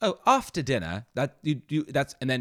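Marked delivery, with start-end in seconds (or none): 0.0-1.1 put-on British accent, higher. Explaining basic dialect, demonstrating how to say after: British accent. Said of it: "trying to do a British accent".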